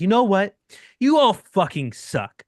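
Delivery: mock full-throated yell, high, at top volume. Retelling a man at a restaurant table shouting at everyone: imitating a man yelling. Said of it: "at the top of his lungs".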